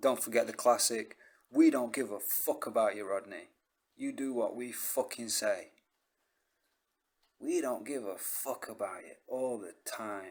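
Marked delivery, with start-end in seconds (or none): 1.5-10.3 put-on southern London accent. Quoting the voices' classic line to rodney, in a south london accent. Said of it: "the voices have got like southern London accents".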